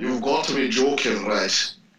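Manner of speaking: put-on thick, broad northern English accent, laid on strong. Retelling asking about tanning, quoting the people there replying: strong northern accent. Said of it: "in the most northern accents I ever heard".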